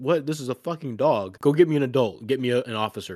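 loud, frantic, alarmed, panicked outburst. Telling a story, a man rescued by a ziplining dog freaks out: retelling a man freaking out. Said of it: "the dude freaks out".

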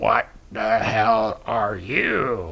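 low, soft voice echoing like a stadium. Recapping a movie scene where the Predator answers Dutch, in Predator's stadium reverb voice. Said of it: "in a super stadium reverb-y voice".

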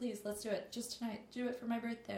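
coaxing, imploring, pleading, begging tone. Retelling how the guy she dates begs her, imitating him begging. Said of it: "He begs".

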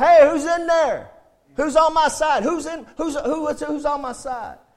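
mock male yelling. Speaker retelling a bible story, voicing the man calling up to a window, retelling a man yelling. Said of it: "So he's yelling out".

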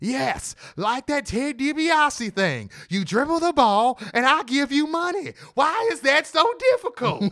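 shrill, very high, drawn-out, fed-up exasperated yell. Retelling a wrestler yelling at a man who asked a question: imitating someone yelling in frustration. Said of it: "who's just had it and just yells".

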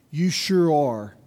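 dismissive, withering, contemptuous and scornful. Retelling a husband's reply after a crash: imitating a contemptuous reply. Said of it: "with contempt in his eyes".

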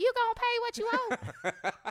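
loud, high, drawn-out sing-song, every word dragged. Showing a favorite line she says to people: Riley impersonation. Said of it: "[name] does a pretty good Riley impersonation".

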